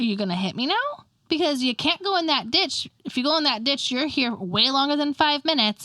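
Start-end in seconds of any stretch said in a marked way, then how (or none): none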